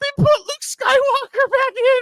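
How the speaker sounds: very high, loud, giddy schoolgirl shriek. Retelling own reaction to a surprise on screen: imitating own giddy excitement. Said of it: "like a little girl".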